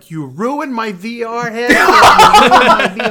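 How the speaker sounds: high, loud, drawn-out screaming. Retelling how he was screaming after the fireplace fall: imitating Quinn screaming. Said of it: "He was screaming at me like".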